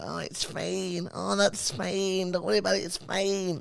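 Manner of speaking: put-on easygoing, high, slow Scottish accent, creaky edges. Asked to do a girl, the speaker does an impression of Melissa. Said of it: "I do an impression of Melissa".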